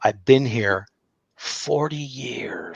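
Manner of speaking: slow, eerie, ghostly, creepy voice. Recounting an investigation in an old hotel, quoting a woman there: imitating a creepy voice. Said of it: "She had this creepy voice".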